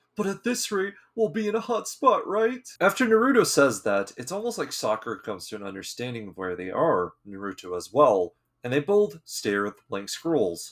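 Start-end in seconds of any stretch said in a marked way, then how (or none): 0.2-2.7 high-pitched whine through tears. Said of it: "A crying Naruto responds".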